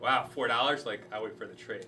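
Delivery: ordinary talk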